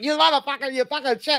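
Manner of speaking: very high, squeaky scream. Retelling how a man came out of a ride, imitating Cartman screaming. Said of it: "screaming like Cartman".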